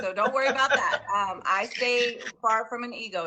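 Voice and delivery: loud, high-pitched laughing chatter.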